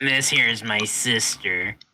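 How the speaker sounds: put-on woman character voice. Voicing a scantily clad woman who comes through the door: voicing a scantily clad woman. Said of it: "And then she opens and says".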